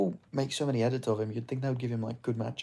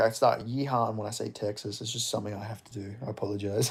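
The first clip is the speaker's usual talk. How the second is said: ordinary talk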